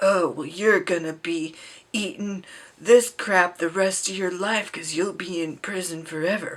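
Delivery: hyper-masculine, hyper-macho tough-guy delivery. Mocking a show's prison scene between the main character and the bad guy: imitating hyper-masculine talk. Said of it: "hyper masculine".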